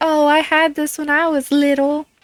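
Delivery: put-on sudden folksy rural country accent. Recalling vintage toys in the toy section, voicing the reaction in a country accent. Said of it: "I don't know why I sound country".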